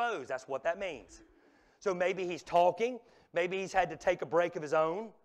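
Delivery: ordinary delivery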